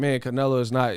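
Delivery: ordinary talk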